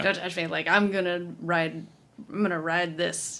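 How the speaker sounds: plain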